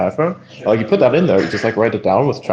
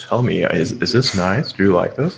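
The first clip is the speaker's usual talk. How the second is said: playfully seductive tone; 2 semitones lower than usual. Speaker talking about AI teases the others on the call; mock-seductive voice. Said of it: "I'm speaking so seductive right now".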